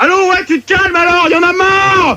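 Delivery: high, exasperated, fed-up yell, snapped out.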